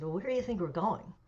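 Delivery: normal talking voice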